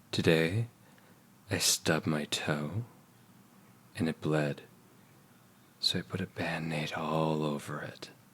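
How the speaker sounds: low, slow, hushed sexy voice. Asked to do the sexy voice, speaking in a put-on sexy voice. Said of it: "is can I do your sexy voice?".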